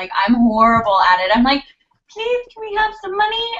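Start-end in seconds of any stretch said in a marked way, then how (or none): 2.2-3.5 very high, cartoonish, pleading character voice. Acting out how she begs for money: Disney character voice. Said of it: "She says it like a Disney character".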